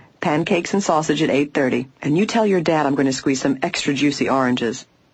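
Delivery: ordinary delivery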